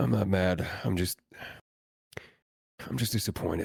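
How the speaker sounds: breathy, whispered character voice. Performing a requested line in the voice of the character Warren.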